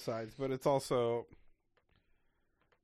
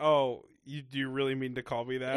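usual speaking voice

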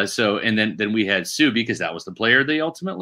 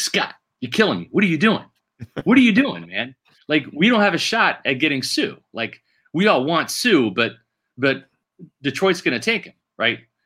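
high-pitched, angry, pissed-off griping; 5 semitones higher than usual. Retelling a phone call from someone upset about a magazine cover: imitating someone pissed off. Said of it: "he's pissed".

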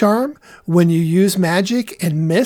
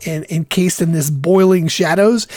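normal talking voice

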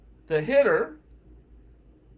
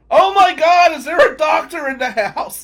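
high, loud, panicked yell. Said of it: "And his father yells".

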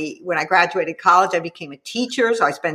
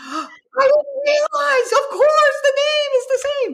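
very high, screamed-out exclamation. Recalling a woman realizing who wrote the book, imitating her scream. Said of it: "she just kind of screamed".

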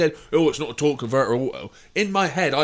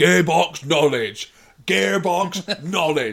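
loud put-on shout, repeated twice over; 5 semitones higher, 4 dB louder than usual. Retelling how they kept shouting during a car talk: imitating own shouting. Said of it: "I started shouting like I would".

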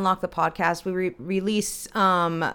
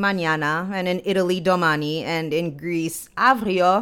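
slow, accidental French accent slipping in; 3 dB louder than usual. Listing the word for tomorrow in other languages, accidental French accent. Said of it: "sorry for that French accent that came out".

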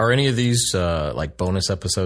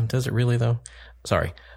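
ordinary delivery

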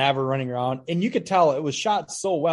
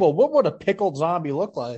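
ordinary delivery

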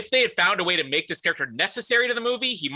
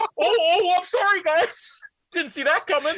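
light, high, apologetic little "sorry"; 11 semitones higher than usual. Retelling how Ben reacted after burping: imitating Ben apologizing. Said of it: "And he's still like".

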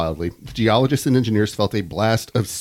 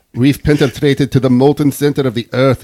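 higher, louder, badly done Russian accent. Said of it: "That's not Russian, is it?".

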